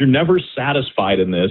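plain

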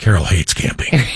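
voice sinking down, low and quiet. Recalling a planned camping trip, noting someone hates camping, voice drops low and quiet. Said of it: "your voice just goes down and quiet".

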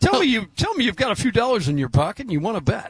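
high, swooping, salesy infomercial host voice. Retelling a betting infomercial before a basketball game: imitating DraftKings infomercial guy. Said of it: "a fifteen-second infomercial that DraftKings just kinda dropped in".

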